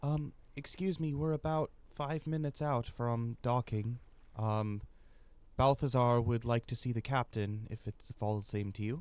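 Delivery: hesitant, polite delivery with halting ums. After a knock on the door, Princess Mila speaks, quiet voice of Princess Mila. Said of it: "A quiet voice".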